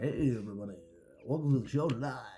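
local radio announcer voice. Imagining the guest ring announcer opening the show: Mike Keller radio announcer voice. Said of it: "he has that voice".

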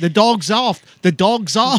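put-on Australian accent. Retelling what an australian man in a video shouted, imitating an australian accent. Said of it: "he's Australian, he's like".

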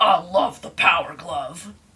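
slow, menacing, sinister-sounding voice.

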